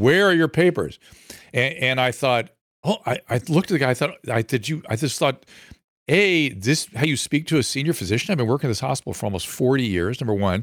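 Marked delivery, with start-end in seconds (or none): 0.0-1.0 put-on scream, higher pitch. Retelling how a security guard screamed a demand: imitating a guard screaming. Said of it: "he started screaming at me".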